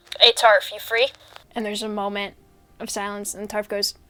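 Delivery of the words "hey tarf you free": guard character voice over radio, louder. Voicing a guard calling someone over the radio: guard calling on the radio. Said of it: "go on the radio and be like".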